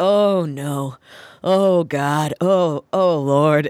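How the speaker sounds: mock muttered exclamations under breath. Recalling an employee moving bins, imitating someone muttering. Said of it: "muttering under her breath".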